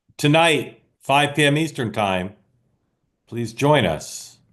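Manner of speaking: measured, unhurried, slow, deliberate promo-style announcer read. A host announces tonight's episode while a promo graphic comes up, talking slowly. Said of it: "Talking slowly because you're about to see".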